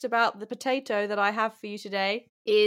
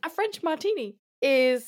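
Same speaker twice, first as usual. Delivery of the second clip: pitched-up advert narration voiceover; 5 semitones higher than usual. Asked what a french martini is, the speaker answers like an m&s advert voiceover. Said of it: "You'd be really good at, like, M&S adverts".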